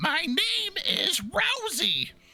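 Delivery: put-on tiny, squeaky, very high gnome-girl voice. A narrator brings a gnome girl into the scene as she introduces herself, in a squeaky Rosie voice. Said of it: "you hear a squeaky voice corrector saying".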